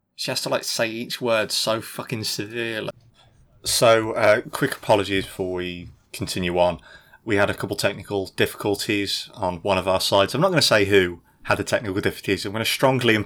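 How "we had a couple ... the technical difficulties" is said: ordinary delivery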